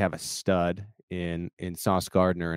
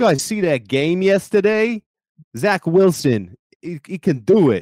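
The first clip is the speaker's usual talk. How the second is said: booming, high-pitched, loud put-on New York accent; 12 semitones higher, 9 dB louder than usual. Challenged to give his best New York Jets fan, he talks: New York accent. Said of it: "give me your best New York Jets and your best New York accent".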